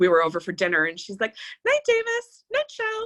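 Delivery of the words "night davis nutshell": put-on very high, squeaky, tiny little-girl toddler voice. Retelling what a two-year-old girl said at dinner, imitating a squeaky toddler voice. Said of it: "in this like squeaky voice".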